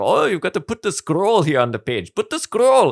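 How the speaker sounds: put-on South African accent. Retelling a film character who calls the aliens prawns, in a put-on South African accent. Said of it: "it's the South African accent".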